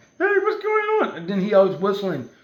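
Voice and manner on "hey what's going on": cartoon mouse voice, pitched up very high. Retelling how the little mouse character in a movie talks: Mickey Mouse voice. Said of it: "that's how he talks".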